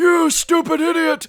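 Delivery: put-on wheezing voice. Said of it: "it says "wheeze, wheeze" behind him".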